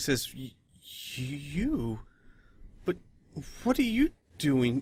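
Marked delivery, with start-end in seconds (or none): 1.1-4.8 hushed, surprised, slow with drawn-out "you". A character unexpectedly sees the group, surprised. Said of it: "his face gets very surprised".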